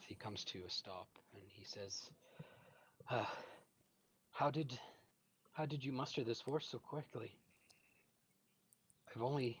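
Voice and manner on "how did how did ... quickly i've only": breathless, higher-pitched. Voicing a fleeing man who stops to talk: out of breath. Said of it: "he cautiously approaches you out of breath".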